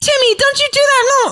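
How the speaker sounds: put-on squeaky, very high-pitched little kid voice. Retelling what kids said over a game chat: imitating high-pitched kids. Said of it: "these, like, high-pitched kids".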